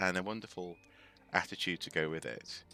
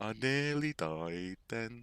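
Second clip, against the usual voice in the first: put-on slow, drawn-out Liverpool Scouse accent; 3 semitones higher than usual. Speaker, not from Liverpool, tries to do his voice, imitating a Liverpool accent. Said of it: "properly do his voice because because I'm not from Liverpool".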